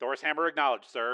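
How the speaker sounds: plain reading voice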